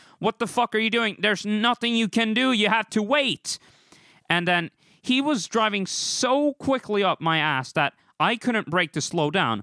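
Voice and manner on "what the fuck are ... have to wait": imitated yelling, higher. Retelling a tailgating driver encounter, imitating own past yelling.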